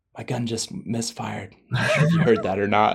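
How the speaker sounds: imitated whisper. Retelling a hunting partner's words after his gun misfired: imitating a whisper. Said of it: "Hayden just whispers to me".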